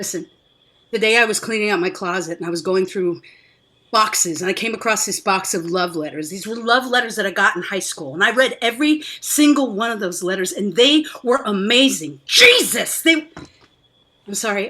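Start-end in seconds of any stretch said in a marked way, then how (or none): 10.5-13.0 raised, drawn-out voice with swooping pitch. Speaker telling of rereading old high school love letters: raised voice. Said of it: "I didn't mean to raise my voice".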